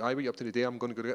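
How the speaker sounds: put-on rapid, full-speed, casual Scottish accent. Showing how he speaks with his Scottish friends: fast Scottish speech with friends. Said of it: "and we speak like this".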